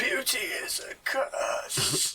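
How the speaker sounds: croaked-out voice. A man lying on the ground lifts his head and speaks to you, croaking. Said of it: "He croaks out at you".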